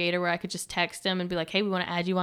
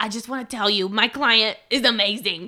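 put-on raspy Long Island accent, higher and louder; 3 semitones higher, 6 dB louder than usual. Retelling what a manager said, imitating raspy Long Island smoker voice. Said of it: "very raspy smoker voice".

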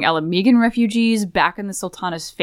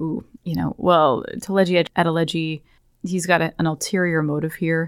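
whisper, slower; 3 semitones lower than usual. Recounting a group discussion, voicing Alfano speaking aside to them, imitating Alfano's whisper. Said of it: "kind of whispering to us like".

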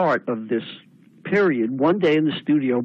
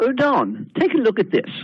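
put-on gentlemanly English accent, lifted and pitched-up; 5 semitones higher than usual. Quoting a very gentlemanly man who hands over his business card, in a pretend english accent. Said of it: "pretend to do an English accent".

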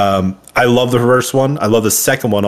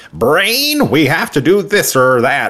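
high, pinched, nasal voice swooping in pitch; 6 semitones higher than usual. Asked what the original Inspector Gadget sounds like, doing a nasally Inspector Gadget voice. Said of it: "It's just like really nasally".

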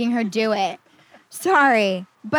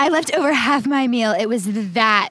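ordinary delivery

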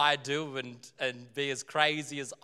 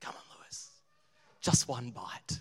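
taunting whisper. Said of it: "see the cupcake taunting me".

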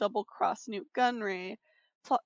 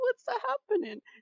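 very high-pitched squeaky voice. Retelling Jar Jar being dragged off: Jar Jar voice. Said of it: "Jar Jar's just like".

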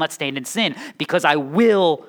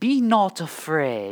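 fake, put-on British accent. Delivering a Bible character's line like in movies, put-on British accent. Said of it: "since Bible people have to speak in British accents according to the movies".

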